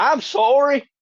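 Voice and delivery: trying to sound American. Asked to say sorry, the speaker answers in an attempted American accent. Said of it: "I'm trying to say it Americanized".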